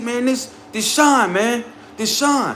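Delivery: showy, fake stage whisper. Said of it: "fake whispering".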